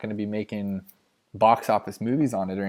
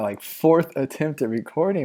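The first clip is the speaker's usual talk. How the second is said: talking through laughter, higher; 6 semitones higher, 4 dB louder than usual. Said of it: "I'm laughing".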